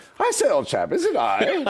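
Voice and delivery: put-on very high, swooping, sing-song posh British accent. Retelling disciples standing up one by one, the last one: British accent as Judas. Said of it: "Judas gets up with his British accent and says".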